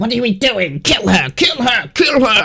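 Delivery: very high, confused, perplexed goblin shouting. Voicing a perplexed goblin who urges the others to kill her: perplexed goblin yelling kill her. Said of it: "he's now a little bit perplexed".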